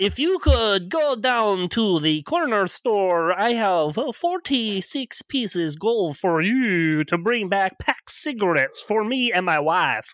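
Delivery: put-on Eastern European accent. Game master voices a Barovian character, Borat-style Eastern European accent. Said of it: "Terrible Eastern European cliches".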